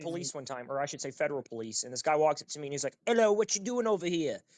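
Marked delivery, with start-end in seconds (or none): 3.0-4.4 put-on Southern British accent, pitched up. Retelling a federal police officer walking up to him, in a Southern British accent. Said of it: "it was this like Southern British accent".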